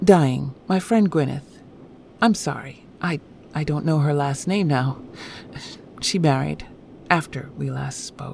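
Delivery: plain reading voice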